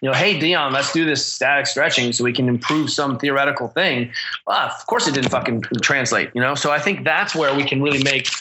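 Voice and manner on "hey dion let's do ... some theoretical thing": ordinary talk, nothing marked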